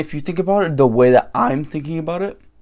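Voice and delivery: voice breaking and cracking mid-line. A speaker explaining his thinking to a bro, voice crack. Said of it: "voice crack, bro".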